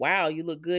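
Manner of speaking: normal talking voice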